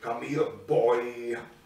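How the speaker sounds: big, low, deep stage devil voice. Retelling a film scene, imitating the devil guy. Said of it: "the devil guy is like".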